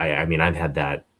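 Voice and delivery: ordinary talk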